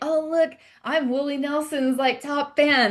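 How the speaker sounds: put-on thrilled, eager, high, drawn-out voice. Retelling how dad shows off a fan badge: imitating dad sounding excited. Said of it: "he's always so excited about it".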